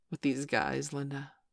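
plain reading voice

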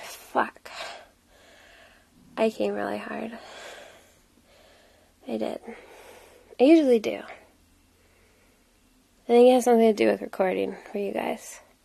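breathless, winded, soft, rough spent voice. Right after finishing, talking to the listeners being recorded for, out of breath. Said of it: "I'm out of breath and sweaty".

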